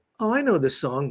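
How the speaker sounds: ordinary delivery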